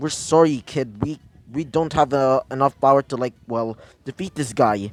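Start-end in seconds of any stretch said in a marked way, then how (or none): none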